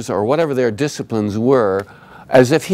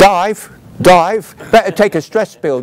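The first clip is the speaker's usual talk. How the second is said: put-on high-pitched Cockney accent; 7 semitones higher, 4 dB louder than usual. Recalling how Hal sounded on the voiceover, Hal's Cockney voice. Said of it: "this is how Hal sounded. ... like working with Michael Caine".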